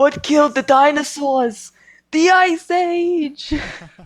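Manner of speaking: high, slow villain voice. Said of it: "Mister Freeze, he made so many snow and ice puns".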